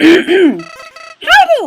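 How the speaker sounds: high, swooping borky character voice. Doing voices for viewers, speaking as Flowey in a Borky Flowey voice. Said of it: "I'm doing the Borky voice for Flowey".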